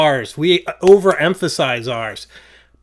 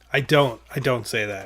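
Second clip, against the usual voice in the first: ordinary delivery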